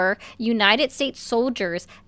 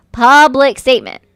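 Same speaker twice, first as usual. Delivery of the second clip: very loud, raised, insistent voice; 3 semitones higher, 10 dB louder than usual. Pressing a caller who dodges the question: raised voice. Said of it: "Why do you gotta raise your voice?".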